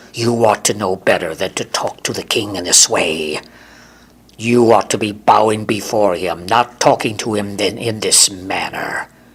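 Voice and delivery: slithering, scolding, human-snake voice. Reading Hector's reply to Michael in a story, in a voice like a human snake. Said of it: "His voice reminded [name] of what a human snake would sound like. / [name] responded, / His voice reminded [name] of what a human snake would sound like".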